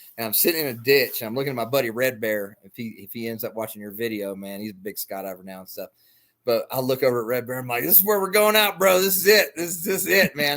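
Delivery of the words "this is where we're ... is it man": loud, high giggling through every word. Retelling a gunfight from a ditch, talking to his buddy, retelling laughing through words. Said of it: "quit laughing".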